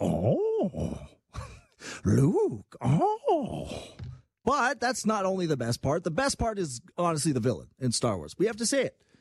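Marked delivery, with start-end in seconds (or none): 0.0-3.8 swooping, curious creature noise. Recalling the noise university friends made, a mock-curious Yoda noise. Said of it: "make the exact same Yoda noise whenever he's".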